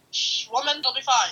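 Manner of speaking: put-on cute little Indian accent. Retelling Ari running a yellow light; imitating Ari's Indian accent. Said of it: "cute little Indian accent".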